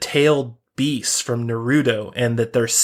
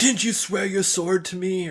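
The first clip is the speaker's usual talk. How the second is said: put-on acted, high, whiny, too-young-sounding voice; 7 semitones higher, 4 dB quieter than usual. Speaker imitates the king character's voice from a trailer, whiny and young-sounding. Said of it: "the guy who was whiny".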